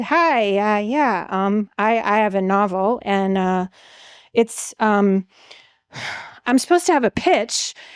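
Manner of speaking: acted terrified stammer. Recalling her first words when pitching her novel, retelling terrified stammering. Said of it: "she's terrified".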